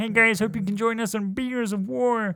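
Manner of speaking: very high, squeezed cartoon frog voice. Closing the podcast episode as a joke: Kermit voice. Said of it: "I'll do it like Kermit".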